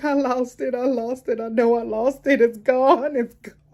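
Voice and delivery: loud, high-pitched, tearful sobbing and boohooing. Retelling talking to the doctor while crying: retelling own past crying. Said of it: "I'm boohooing, I'm crying".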